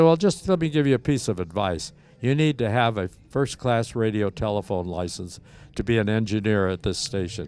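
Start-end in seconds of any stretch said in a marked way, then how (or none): none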